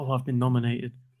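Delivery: ordinary talk, nothing marked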